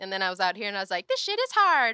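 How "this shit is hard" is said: very high, loud cartoonish voice. Recalling their own thought after arriving out here: cartoon imagination voice. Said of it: "that's your imagination voice".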